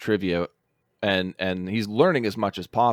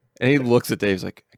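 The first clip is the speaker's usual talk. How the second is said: ordinary delivery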